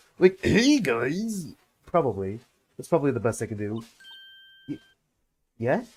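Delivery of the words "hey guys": gravelly imitated voice. Trying out a voice for another character, grovelly Marco voice. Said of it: "a grovelly, a grovelly M-, Marco voice".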